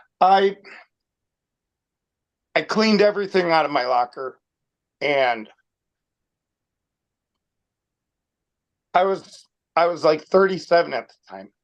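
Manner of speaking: choked up, voice catching with emotion. Recalling cleaning out a locker on the last day at work: getting choked up. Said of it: "I'm gonna get, like, choked up again".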